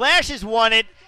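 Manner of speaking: emphatic, loud, slow triumphant call.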